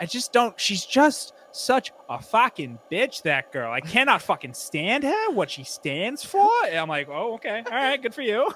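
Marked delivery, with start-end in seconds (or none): 0.1-6.5 put-on Long Island-accented voice. Imitating a woman going off about another girl, imitated Long Island accent. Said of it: "she'll start slipping into like a Long Island accent where she's like".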